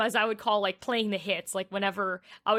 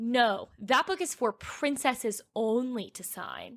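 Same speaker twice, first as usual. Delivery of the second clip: put-on slow, swooping, sassy intonation. Retelling what a mom at an autograph table said, imitating a sassy tone. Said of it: "with a sassy intonation in her voice".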